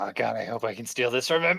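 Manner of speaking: hushed half-whisper under the breath. Playing a character aiming a cannon at a swarm: half-whispering under breath. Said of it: "whisper under my breath".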